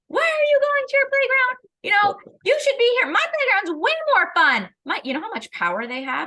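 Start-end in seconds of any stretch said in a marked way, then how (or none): 0.1-4.7 high, loud pretend shouting. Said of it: "I'm shouting at you".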